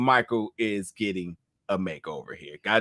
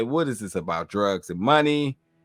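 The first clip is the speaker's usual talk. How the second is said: ordinary talk, nothing marked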